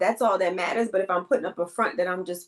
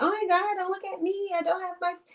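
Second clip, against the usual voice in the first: put-on very high, prissy, fussy girly voice; 12 semitones higher, 3 dB quieter than usual. Mocking the kind of girl she says she is not: imitating a prissy girl. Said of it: "those prissy girls like".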